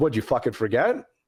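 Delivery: stern, serious, no-joke, angry tone. Retelling an athlete confronting the speaker while jogging: imitating a serious angry question. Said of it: "this sounds pretty serious".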